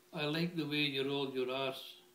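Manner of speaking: normal talking voice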